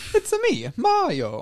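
put-on very high, slow voice with Italian accent. Quoting a catchphrase again despite complaints: Mario voice. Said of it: "must say Mario quote".

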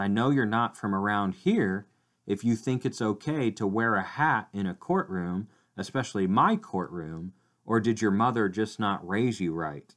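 stern, severe, reproving tone. Retelling a judge scolding a young man for his hat: imitating a stern judge. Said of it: "the judge looks at him very sternly and says".

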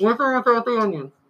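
very high-pitched voice. Playing the Burger King drive-thru worker taking an order: Burger King drive-thru worker voice. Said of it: "You're the guy that works the Burger King drive-thru".

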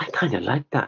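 acted whispered voice. Retelling what someone confided to the Prof, in a whispered voice. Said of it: "in a kind of a whispered voice".

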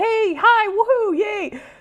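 very high, bubbly, hyper YouTuber cheer. Recalling own younger self: imitating stereotypical YouTuber energy. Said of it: "the stereotypical YouTuber energy of".

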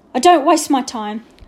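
curt, snapped reply. Narrator reads a character's answer to a child's excuse, snapping. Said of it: "snapped Mr. Johnson".

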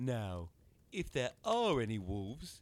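taunting, mocking, high-pitched sing-song. A man turns to a girl and smiles as he speaks to her: mocking tone. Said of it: "he said in a mocking tone".

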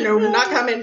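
ordinary talk

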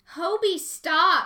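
very loud, teasing, playful high shout. Narrator reads their own line while hobie tickles them: playful shout. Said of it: "I shouted playfully".

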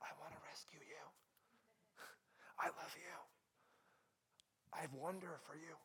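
very quiet, hushed, breathy whisper. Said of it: "He's whispering to them".

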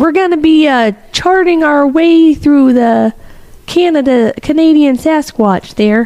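put-on Canadian accent. Previewing the group's sasquatch route, the speaker uses a canadian voice. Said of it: "That's my Canadian voice, eh?".

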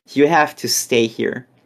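ordinary delivery

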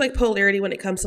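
normal talking voice

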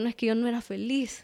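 ordinary delivery

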